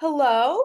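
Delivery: high, loud, very earnest. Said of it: "just a very earnest".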